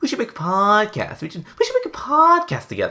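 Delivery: very high, goofy, silly, kidding voice. Retelling his joke to three people on a voice call: silly joking voice. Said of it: "I jokingly said in a silly voice".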